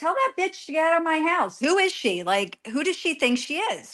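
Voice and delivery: play-acted, high-pitched yelling. A speaker recounts what a man yelled at them over the phone, retelling someone yelling. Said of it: "he's yelling".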